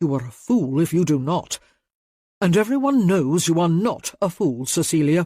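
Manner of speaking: sharp, cutting, snapped delivery. In a story, the duke answers the woman he proposed to, snapping. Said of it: "[name] Cantrell, the new Duke of Tereford, has inherited a dukedom in disarray and is overwhelmed by his unaccustomed responsibilities. / [name] snapped, / [name] Cantrell, the new Duke of Tereford, h".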